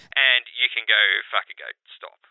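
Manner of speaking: level, deadpan, flat monotone. Retelling how an interpreter translated a customer's angry swearing: imitating a monotone interpreter. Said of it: "into the most monotonic".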